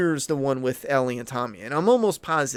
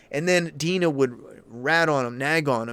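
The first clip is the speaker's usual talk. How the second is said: ordinary talk, nothing marked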